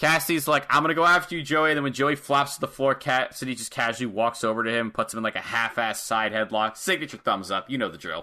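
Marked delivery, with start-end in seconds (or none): 0.7-1.7 put-on belted out loudly in a Jersey accent. Describing a wrestling match, quoting the wrestler as it starts: loud jersey accent. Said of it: "he talks a lot and it's in a loud Jersey accent".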